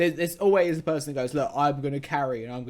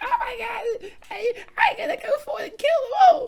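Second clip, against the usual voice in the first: shrill, very high squealing; 4 dB louder than usual. Imitating young gamers on voice comms: imitating squealing gamers.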